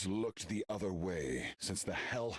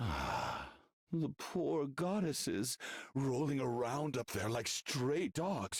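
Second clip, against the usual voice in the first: derisive, higher-pitched mocking taunt; 6 semitones higher than usual. A speaker taunts a listener about abandoning their heroes, mocking. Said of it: "you say it in a mocking manner".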